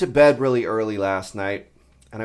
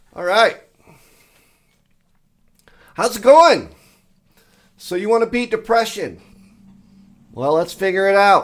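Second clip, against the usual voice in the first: loud, high, full-on shouting; 7 semitones higher, 5 dB louder than usual. Greeting listeners at the start of his talk, yelling. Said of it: "I'm yelling".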